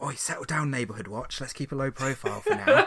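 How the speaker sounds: hushed half-whispered aside. Half-whispering to another player's character to keep a low profile: half-whisper. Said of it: "I whisper over to him".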